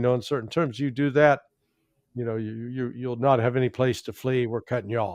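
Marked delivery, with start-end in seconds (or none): none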